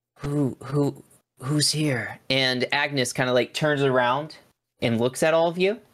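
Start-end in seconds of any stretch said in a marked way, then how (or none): 0.2-2.2 barely audible, slow, drawn-out voice. Narrating to the group as they walk in, a faint voice calls out. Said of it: "a faint voice go".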